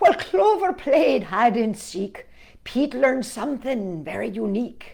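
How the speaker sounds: put-on Irish accent. Reading a story aloud in a put-on Irish accent. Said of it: "I have to do this in the Irish accent".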